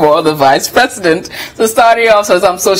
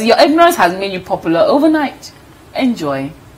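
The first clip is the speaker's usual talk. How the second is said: ordinary delivery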